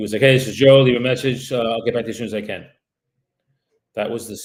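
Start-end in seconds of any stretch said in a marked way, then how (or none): 0.2-2.7 rushed, loud, rapid-fire rattled-off talking. Retelling a called man's voicemail greeting: fast-talking Joe impression. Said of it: "he talked very fast".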